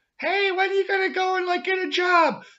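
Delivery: very high, loud hollering mom voice. Retelling a skit where the mom calls to her son: imitating a mom hollering. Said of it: "his mom's hollering out".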